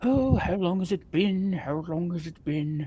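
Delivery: repetitive mumbling, over and over to itself. Describing something heard muttering in there, the narrator voices it: muttering voice. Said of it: "it's kind of like a muttering sound".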